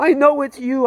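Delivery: play-acted, very high, sobbing, tearful outcry. Retelling being held by Jesus, retelling crying out in tears. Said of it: "I'm bursting into tears".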